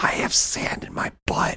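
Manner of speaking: put-on slow, drawn-out, hushed, close child whisper. Retelling a daughter pulling him close at the beach: imitating a child whispering. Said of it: "she pulls me down close".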